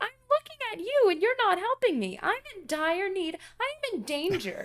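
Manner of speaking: very high-pitched, shrill, loud yelling. Retelling a lady in the session yelling at them from the back, imitating her yelling. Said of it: "the one lady is yelling at us".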